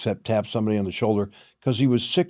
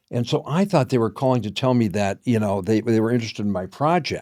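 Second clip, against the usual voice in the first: plain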